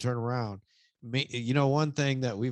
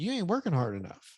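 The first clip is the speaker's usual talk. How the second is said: normal talking voice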